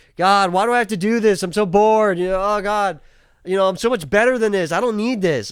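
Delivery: mock sarcastic condescending whine. Retelling a character who mocks a helper's lessons: imitating a sarcastic, condescending whine. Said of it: "sarcastic and condescending".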